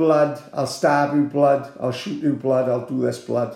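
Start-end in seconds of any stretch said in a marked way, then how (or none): none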